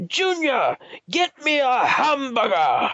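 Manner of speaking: very high, drawn-out, swooping sing-song character voice. Describing voiceovers for different characters, imitating the guy's character voice. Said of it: "I'll just say it like how he, how he says it".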